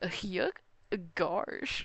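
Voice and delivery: clumsy goofy cartoon voice attempt. Admitting they can't do the voice well, then trying a bad Goofy impression. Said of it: "But I can't do it that well. I just go like".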